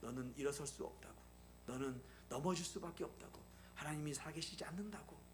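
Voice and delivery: soft, hushed, whispering tempter's murmur.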